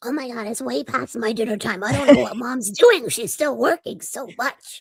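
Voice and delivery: put-on raspy little kid voice. Voicing Ruby when asked if it's dinner time: scrappy, raspy little kid voice. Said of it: "scrappy, like raspy little kid voice".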